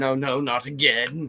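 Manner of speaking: very slow, stretched-out, acted-out cry. Joking about a chest burster, acting out John Hurt screaming. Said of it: "then you're John Hurt screaming".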